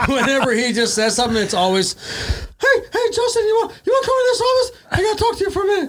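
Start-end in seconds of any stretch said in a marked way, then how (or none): 1.9-5.9 very high little cartoon mouse voice. Mocking a man they tease by quoting what he always says, Mickey Mouse voice. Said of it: "Somehow he got this Mickey Mouse voice when he talks".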